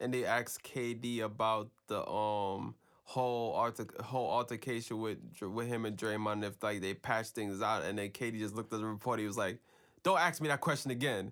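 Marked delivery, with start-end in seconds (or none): 10.0-11.3 irritated, angry, curt brush-off tone. Retelling how a player answered a reporter's question: imitating KD saying it angrily. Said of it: "he said it so angry".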